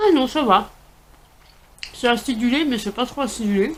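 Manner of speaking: speaking with mouth full of food. Tasting something sour, talking with mouth full. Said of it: "Dit-elle la bouche pleine".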